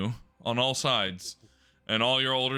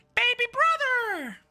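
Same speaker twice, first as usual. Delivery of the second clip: put-on squeaky, tiny, very high-pitched little-girl voice. A narrator voicing the barely older sister greeting her brother, in Darling's young girl voice. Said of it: "say in a young girl's voice".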